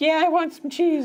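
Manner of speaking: very high-pitched pet dog voice. Retelling how Harry voices the dog when she talks to it, high-pitched voice as Sally. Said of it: "he pitches it really high".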